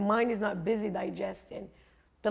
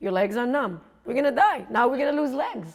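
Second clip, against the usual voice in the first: scolding, alarmist, yelling rant; 3 semitones higher than usual. Retelling a woman yelling at the speaker during meditation, retelling her yell. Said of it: "She's yelling at me like".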